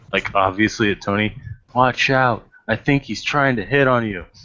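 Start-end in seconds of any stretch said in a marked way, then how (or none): 1.7-4.2 loud stage whisper. Voicing a character warning another about flirting: loud whisper. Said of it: "Mox is gonna whisper loudly".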